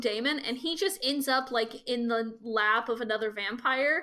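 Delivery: ordinary talk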